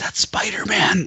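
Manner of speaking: put-on child whisper. Retelling what a kid behind in the theater said: imitating a kid whispering. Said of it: "whispering to his dad".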